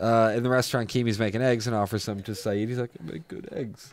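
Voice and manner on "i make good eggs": breathy, whispered character voice. Retelling a scene where Keamy offers eggs: imitating Keamy. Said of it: "I can't do impressions of anybody".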